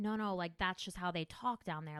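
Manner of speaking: usual speaking voice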